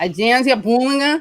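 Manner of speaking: slightly nasal Brazilian Portuguese accent. Speaker names a journalist's agency, saying it in brazilian portuguese accent. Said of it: "that's my Brazilian Portuguese accent".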